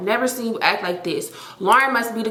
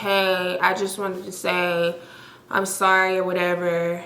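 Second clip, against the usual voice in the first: mock flat, slow, can't-be-bothered unserious monotone; 2 semitones lower than usual. Imitating a woman's voicemail apology, imitating a flat unserious apology. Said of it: "the most monotone, like unserious ass voicemail ... like literally talking just like this".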